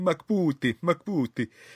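put-on odd, weird, wonky Italian accent. Speaker retells a kid talking to another player, in a weird off Italian accent. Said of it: "trying to do this kind of weird off Italian accent".

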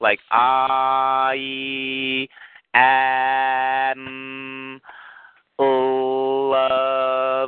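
very slow, drawn out, every syllable emphasized. Speaker demonstrating how they break a phrase into syllables: very slow, syllable by syllable. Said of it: "I just do it very slow like that".

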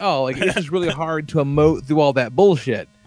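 ordinary talk

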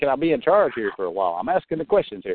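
barking, commanding drill sergeant voice. Mocking another caller who asked to speak: imitating a drill sergeant tone. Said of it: "You sound like a drill sergeant".

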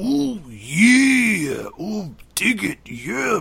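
loud, high, hyped delivery with every "yeah" drawn out. Walking behind a seventeen-year-old who doesn't know him, the speaker does a Macho Man impression. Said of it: "walk around behind her and go".

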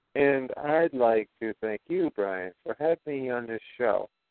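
measured, careful, deliberately slow, soft and drawn out. Thanking brian for having them on the show: talking slower than usual. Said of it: "I am talking a little bit slower than usual".

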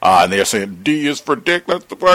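high, loud mocking sneer.

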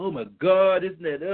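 mock, acted upset reaction. Acting out how people react to a disappointment: imitating someone getting upset. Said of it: "we get all upset, we get mad".

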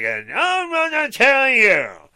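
very high, swooping, condescending witch voice. Imitating her refusing to tell: mocking talking-down witch voice. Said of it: "like she's talking down to you with a witch voice".

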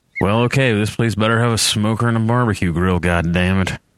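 muttered under the breath. Climbing off the bus with his bag, a man says it under his breath. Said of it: "Eric says under his breath".

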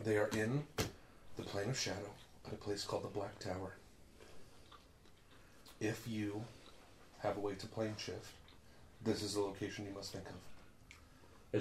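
very quiet, flat, disembodied monotone whisper. Narrating a voice heard inside the listeners' heads: monotone disembodied whisper. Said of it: "disembodied, monotone, genderless voice whisper".

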